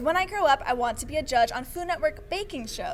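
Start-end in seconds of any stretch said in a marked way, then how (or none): none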